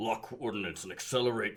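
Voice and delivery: soft, robot-style voice. Quoting a line from a scene, trying it in an Optimus Prime voice. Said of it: "let's see if I can do a voice".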